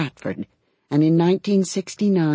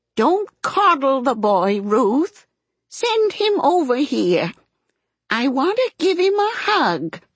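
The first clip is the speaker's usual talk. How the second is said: put-on very high, rising, imperious, peremptory old woman voice; 10 semitones higher than usual. Narrator reading a grandmother demanding the boy be sent over, voice rising peremptorily. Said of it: "Grandma's voice rising peremptorily".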